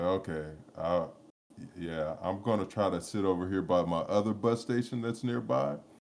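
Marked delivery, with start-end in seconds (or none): none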